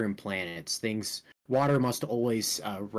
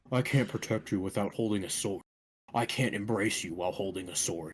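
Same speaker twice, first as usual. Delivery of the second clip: low, deep put-on voice; 3 semitones lower, 3 dB quieter than usual. Showing they can do voices too, reading lines in a deep voice. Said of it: "I can do a deep voice".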